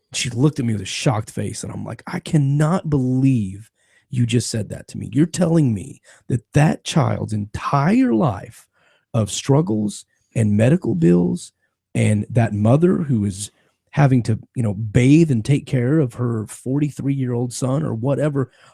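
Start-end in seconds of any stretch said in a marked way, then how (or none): none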